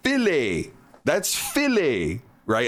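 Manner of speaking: put-on slow, swooping, middle-aged jazz-club drawl. Recalling a younger guy who nicknamed everyone, the speaker quotes him: jazz-club old man voice.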